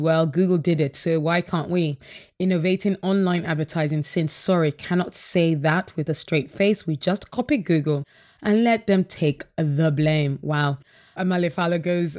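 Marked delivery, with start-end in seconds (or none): none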